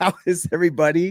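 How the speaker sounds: words broken up by laughter throughout. Greeting viewers at the start of a live show, laughing while talking. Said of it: "I don't even know why I'm laughing".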